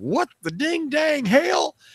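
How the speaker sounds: very high, drawn-out, put-on Texan drawl. Imagining an engineer reacting to a rival company's code, in a put-on Texas accent. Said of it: "In their Texas accent in Europe".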